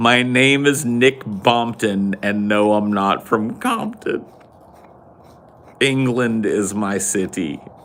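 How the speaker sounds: giggling, laughing through the words. Reading words aloud and unable to keep from laughing: laughing while talking. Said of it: "I can't even read it without laughing".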